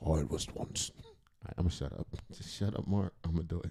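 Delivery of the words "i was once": put-on low old-man voice, Jamaican accent. Describing the deep old voice Shine now has: James Earl Jones voice. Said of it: "the James Earl Jones".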